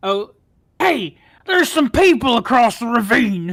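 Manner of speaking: booming, very loud, high-pitched ogre shout. Player voicing an ogre character for the group: ogre voice. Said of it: "that's not an ogre voice".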